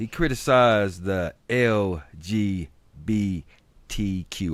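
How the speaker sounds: very slow, deliberate, enunciated letter by letter. Speaker slows down on a term that is a tongue twister for them: saying it slowly. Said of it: "I got to say this slow".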